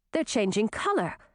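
ordinary delivery

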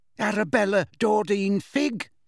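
quavering, wavering delivery in a high-pitched voice. Narrator reads a nervous woman giving her full name when asked, quavery voice. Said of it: "in her quavery voice".

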